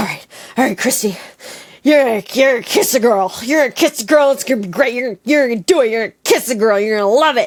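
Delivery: fast, full-blown panicked speech. Retelling a pep talk to herself in a bathroom: imitating own panicked self-talk. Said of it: "full-blown, like, panic mode".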